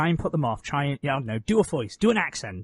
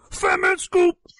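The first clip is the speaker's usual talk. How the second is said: very high-pitched, loud yelling; 5 dB louder than usual. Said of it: "do [name] as a character".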